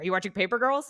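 fatherly voice. Retelling a text from their dad, doing an impression of the dad. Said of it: "That's my impression of my dad".

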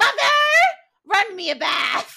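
very loud, shrill scream. Quoting a line from the show, screaming as Neville. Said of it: "screaming at his mom to run a bath".

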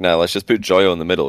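ordinary talk

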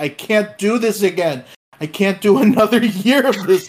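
mock anguished, fed-up, high, loud, pained yell. Recalling the Nico Jackson miss to the group, retelling a pained yell. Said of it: "yelled out like in pain".

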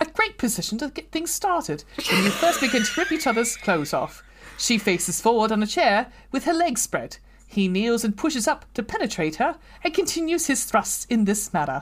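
put-on British accent. Reading a passage aloud after deciding to do it in a british accent. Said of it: "do it in a British accent".

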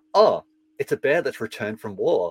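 mock-deadpan, dry delivery. Retelling a funny woman's line as she pulls a bear from a bag, mock-deadpan delivery. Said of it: "just really dryly".

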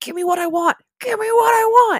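screaming high and loud. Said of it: "screams into the microphone".

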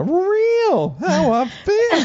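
very high, slow, drawn-out sing-song drawl. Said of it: "You sounded like, um, [name] just now".

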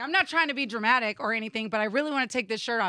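usual speaking voice

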